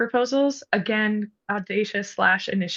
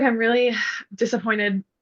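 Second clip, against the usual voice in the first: plain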